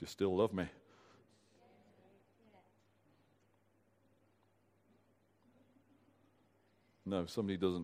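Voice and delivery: soft, deep, low, hushed sing-song playful teasing. Pausing a talk on Scripture to tease the listeners, teasing. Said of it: "I'm just teasing you".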